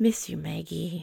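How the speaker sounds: play-acted grave, earnest, dead serious, very solemn tone. Retelling a two-year-old's coached message on camera: imitating a very solemn toddler. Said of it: "very, very solemnly".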